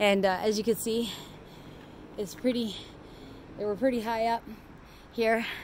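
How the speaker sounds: soft, panting, breathless and winded. Just made it to the top of the steep part of the park: out of breath. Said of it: "this is my out of breath".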